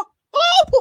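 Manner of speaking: squeaky voice pitched high and loud. Asked to do it again, repeating the Mickey Mouse voice. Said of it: "Do that again".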